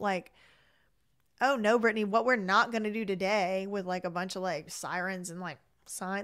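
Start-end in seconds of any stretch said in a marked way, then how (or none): none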